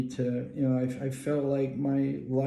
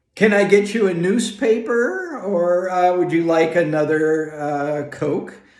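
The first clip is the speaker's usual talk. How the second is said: very loud, bellowing shout; 4 semitones higher, 9 dB louder than usual. Chucking rocks into a lake, pretending to be a flight attendant: mock flight-attendant shouting. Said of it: "I'm shouting things like".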